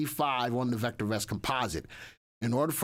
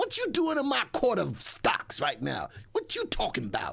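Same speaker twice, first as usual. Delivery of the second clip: put-on swooping sing-song TV-judge voice, pitched up; 8 semitones higher than usual. Joking about a guest looking like Judge Mathis: Judge Mathis impersonation. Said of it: "that's my Judge Joe Mathis impersonation".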